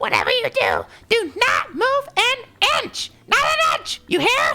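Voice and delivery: swooping sing-song voice, pitch swinging all over. Reading a game character's line aloud, in the Toad voice. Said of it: "I'm gonna go with the Toad voice".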